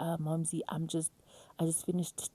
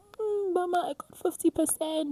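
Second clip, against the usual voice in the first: put-on very high, weepy, tearful crying voice; 13 semitones higher, 4 dB louder than usual. Retelling going to mom about a fifty percent mark: imitating own past crying. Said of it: "I'd go to my mom crying".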